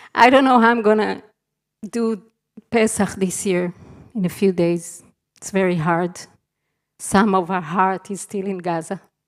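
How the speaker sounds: choked-up, breaking voice, on the verge of crying. After apologizing that they are about to cry, the speaker continues near tears. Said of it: "I'm sorry, I'm gonna cry".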